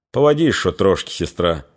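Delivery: ordinary delivery, nothing marked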